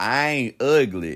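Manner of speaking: very loud, high, put-on country accent. Answering a remark about his looks, in a country accent. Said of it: "In my country voice".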